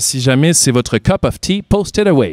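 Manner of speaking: phrase in an English accent. Speaker talking to listeners in french slips into english words, english accent. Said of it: "Désolé pour l'accent anglais".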